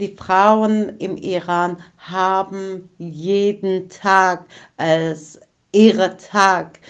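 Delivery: strong emphatic stress on "jeden Tag", especially "Tag".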